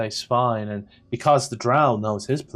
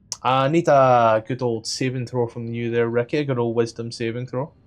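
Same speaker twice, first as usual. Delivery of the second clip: usual speaking voice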